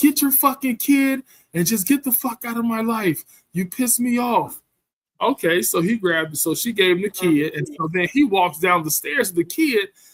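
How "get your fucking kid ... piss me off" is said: put-on yell, higher. Retelling a neighbor's outdoor fight: imitating a neighbor yelling. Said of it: "she's come outside yelling".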